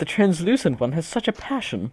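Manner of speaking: gentle, tender, soft, quiet voice. Voicing a businessman who shyly approaches a player: soft voice. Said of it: "he says in a soft voice".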